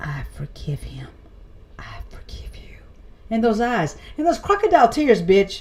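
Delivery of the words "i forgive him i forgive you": ugly, hushed, breathy whisper. Mocking someone who comes out at the fireworks, in an ugly Joe Biden-style whisper. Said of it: "you then whisper that ugly, oh, the whisper like Joe Biden".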